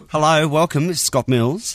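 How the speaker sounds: put-on Australian accent. Asked by another speaker to try one, introducing himself in an Australian accent. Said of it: "Do we do Australian accents with this?".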